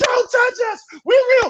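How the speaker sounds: put-on screaming. Retelling what marchers screamed during a fight: imitating people screaming. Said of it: "you hear them screaming".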